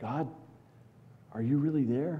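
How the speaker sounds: small, wavering, quavering, trembling voice. A speaker illustrating how people voice doubts about god: trembling little voice. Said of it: "in a trembling little voice".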